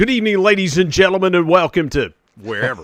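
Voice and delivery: high public address announcer voice. A former high school basketball announcer shows how he opens an event, public address announcer voice. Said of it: "doing public address announcing".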